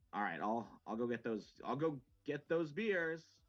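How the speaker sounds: showy, pointed, announcing delivery with rising pitch. Voicing a character leaving to fetch beers: saying it extra loudly. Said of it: "extra loudly".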